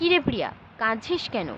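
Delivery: ordinary delivery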